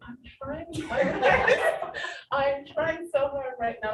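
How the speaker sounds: slow, loud, laughing delivery. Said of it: "I'm like".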